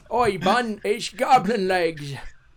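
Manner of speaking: put-on Scottish or Irish accent. Showing another speaker how to talk in her voice: Goblin Leg voice. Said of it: "you gotta talk in her voice".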